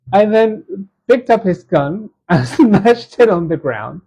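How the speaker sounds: slow, laughing through the words. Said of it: "sorry for laughing".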